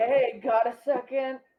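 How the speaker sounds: imitated stoner voice. Reading the Gaw hub aloud, put-on stoner voice. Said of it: "I did my best stoner voice".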